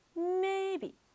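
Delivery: may held high and flat in first tone. Teaching tones, the teacher repeats the word in a high first tone. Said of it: "may with a high voice".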